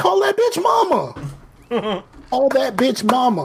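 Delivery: mock hollering, high, swooping yell. Recalling watching a show with an ex-wife, retelling yelling at the screen. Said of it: "I'm yelling at the screen the whole time".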